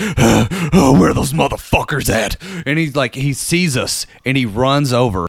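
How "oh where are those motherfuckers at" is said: wild, rabid-dog raging fury outburst. Retelling a man bursting out of a door: imitating a raging man. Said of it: "busts out like a rabid dog".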